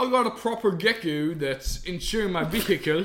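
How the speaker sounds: put-on gecko character voice. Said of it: "Imagine if you did your vows in that voice".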